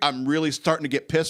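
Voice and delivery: normal talking voice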